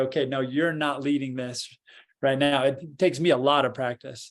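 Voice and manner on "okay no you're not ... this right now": normal talking voice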